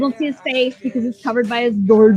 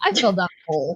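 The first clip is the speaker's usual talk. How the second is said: put-on sarcastic voice, lower pitch; 5 semitones lower, 5 dB quieter than usual. Recapping a scene where Blondie questions Trevor, doing a sarcastic Trevor impression. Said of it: "Trevor's like a sarcastic asshole".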